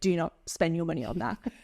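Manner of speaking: ordinary talk, nothing marked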